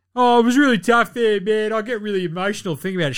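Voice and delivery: high, whiny, sulky voice. Mocking a player who left his team, imitating Kevin Durant whining. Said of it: "Shut up, sook".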